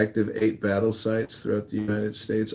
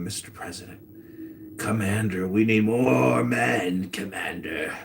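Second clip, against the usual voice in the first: whispered. Acting out an adviser whispering to the president: imitating someone whispering. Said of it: "whispering to him".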